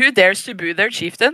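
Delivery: put-on genuine Norwegian accent on English. Mimicking the English version of a Norwegian Viking show, imitating a Norwegian accent. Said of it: "It's the legit Norwegian accent".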